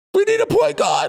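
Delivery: very high-pitched screaming yell. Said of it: "I'm just screaming at the T V like".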